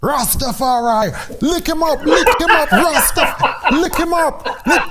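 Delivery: very high-pitched, repeated shouting. Retelling shouting from the corner in the last round: retelling own shout. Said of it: "I was shouting".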